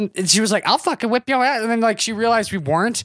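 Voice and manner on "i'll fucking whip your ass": put-on threatening old woman voice, much higher. Retelling a run-in with a 95-year-old woman, imitating a threatening old woman.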